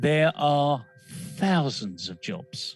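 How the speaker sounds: spoken very slowly and deliberately. Making a point for those listening: very slow and deliberate. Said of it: "I will say this very slowly".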